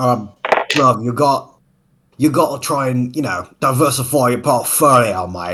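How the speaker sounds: put-on Cockney accent. Joking with friends about using different British accents: Cockney accent. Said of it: "Look at me in my perfect Cockney accent".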